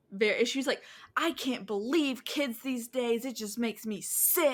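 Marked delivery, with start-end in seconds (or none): 1.1-4.5 disgusted, hostile, indignant scolding rant. Retelling a woman upset at not touching their dogs: mimicking a hostile woman. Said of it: "she became very hostile".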